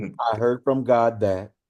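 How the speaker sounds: normal talking voice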